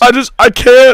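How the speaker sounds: getting emotional. Speaker talks about six years without a Super Bowl, choked up. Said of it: "I'm going to get choked up".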